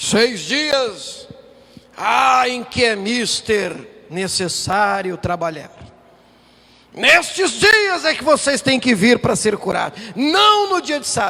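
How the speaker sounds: loud, indignant, scolding tone. Acting out the religious leader's speech to the crowd: imitating an angry religious leader. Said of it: "E o religioso diz".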